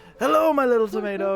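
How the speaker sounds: hale and hearty father voice. Voicing the player's father calling a greeting across the fields: hale and hearty dad voice. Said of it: "Your dad's voice rings across the fields, hale and hearty".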